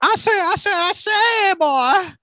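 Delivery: very high, slow, loud, stretched-out cartoon rooster voice. Speaker turns his usual impression into a woman's version: Foghorn Leghorn voice, as a woman. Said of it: "take my my foghorn leghorn impression and make it a woman's voice".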